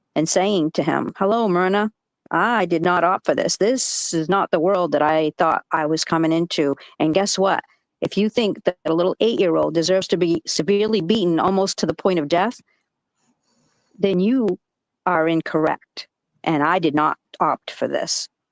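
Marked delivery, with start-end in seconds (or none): none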